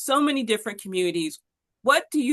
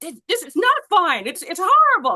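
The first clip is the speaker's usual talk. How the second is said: put-on, shrill, very high yell; 9 semitones higher, 6 dB louder than usual. Retelling friends' complaint about the transit: imitating friends yelling. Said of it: "yelling at me".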